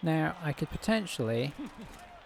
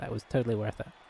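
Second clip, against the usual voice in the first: ordinary talk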